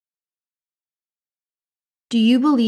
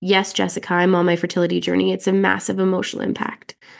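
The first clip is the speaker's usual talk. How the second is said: ordinary talk, nothing marked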